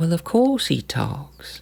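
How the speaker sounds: smooth, high, swooping southern belle drawl. Retelling a story, voicing Concordia's reply in a southern belle voice. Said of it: "is a little bit like a southern belle".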